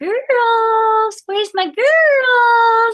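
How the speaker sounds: very high, very slow chicken-calling voice. Showing the voice used to call the chickens in the backyard; chicken-calling voice. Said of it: "what they call a chicken voice".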